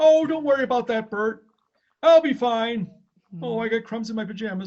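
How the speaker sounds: slow, unhurried, loud, high, drawn-out character voice. Retelling a Bert and Ernie sketch: Ernie voice. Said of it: "eating the cookies in bed".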